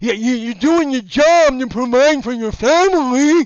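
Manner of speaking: put-on slobbery, drooling voice. Imitating people who defend the guards, put-on drooling voice. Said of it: "I would need a lot more drool".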